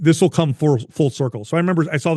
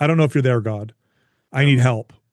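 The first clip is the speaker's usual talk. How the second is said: tense, strained delivery. Retelling praying out loud while driving: retelling a stressed prayer. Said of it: "they sound like this".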